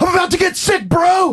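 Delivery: very high, drawn-out, top-of-the-lungs yell. Retelling yelling back and forth with a friend on a subway ride: retelling a scream. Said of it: "top of our lungs".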